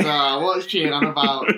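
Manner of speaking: slow, acted, fed-up, dismissive exasperation. Retelling how Dad reacted after rolling his eyes: imitating Dad's exasperation. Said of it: "Dad was just like, "Oh," he rolled his eyes".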